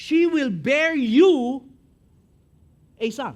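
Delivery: slow, loud stress on SHE, stress on YOU.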